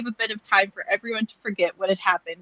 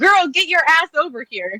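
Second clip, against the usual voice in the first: loud, pitched-up hollering yell; 6 semitones higher, 6 dB louder than usual. Retelling yelling at a cat that ran out the door: imitating own yell at cat. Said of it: "and so I yell at the cat".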